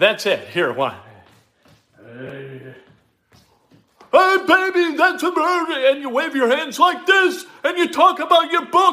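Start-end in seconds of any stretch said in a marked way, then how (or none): 2.0-8.9 swooping, slow, drawn-out yell with stretched hey. Mocking how easy the impression is: Dick Vitale impression, yelling. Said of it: "all you have to do is yell for a minute and sound ridiculous".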